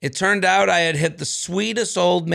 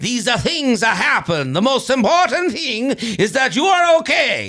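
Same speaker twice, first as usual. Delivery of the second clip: fake Greek accent, pitched up, drifting toward Italian; 6 semitones higher than usual. Trying out a sentence in an accent for a co-host, attempted Greek accent. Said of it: "I think that's more Italian".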